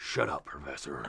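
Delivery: very quiet, grunty mutter under the breath. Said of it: "He's always grunty".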